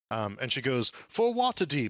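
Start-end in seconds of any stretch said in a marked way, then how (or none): 1.1-1.9 put-on very high, loud, properly spoken accent. Voicing a character charging forward into battle: proper accent. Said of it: "she says it in a pretty proper sort of accent".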